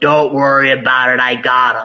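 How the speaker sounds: put-on gruff old man voice. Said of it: "He sounded like the guy in Reservoir Dogs".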